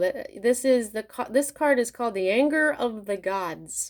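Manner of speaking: plain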